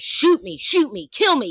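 play-acted, shouted pleading, voice falling apart. Retelling how a man yelled at the cops, begging them; retelling a yell, begging. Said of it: "he is yelling at the cops, begging them".

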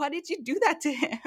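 mock laughing through tears, high-pitched. Speaker retells what a woman asked after the speaker's joke: imitating someone crying-laughing. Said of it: "She's like crying, laughing".

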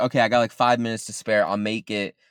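normal talking voice

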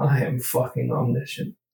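muttering to oneself under the breath. Speaking in character as the school bell rings: muttered under the breath. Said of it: "I kind of say under my breath".

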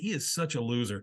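ordinary talk, nothing marked

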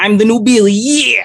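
very high, loud, belted-out character voice. Voicing a character announcing himself as the new Billy: Macho Man Randy Savage voice. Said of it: "in as much of a Billy slash Macho Man Randy Savage voice".

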